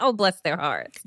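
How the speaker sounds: mocking, sarcastic. Demonstrating a favorite saying in conversation, sarcastic. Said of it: "But it's so sarcastic".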